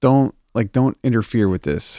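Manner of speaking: ordinary talk, nothing marked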